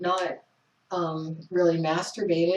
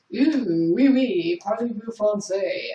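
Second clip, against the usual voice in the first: cartoon-style put-on French accent; 3 semitones higher, 3 dB louder than usual. Speaker who is not a fan of the French teases them in a mock French accent. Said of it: "or whatever kind of accent he has".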